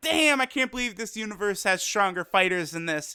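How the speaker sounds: ordinary delivery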